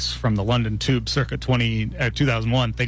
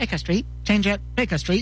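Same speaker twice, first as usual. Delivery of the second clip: very high recorded station announcer voice; 9 semitones higher than usual. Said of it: "I'm like".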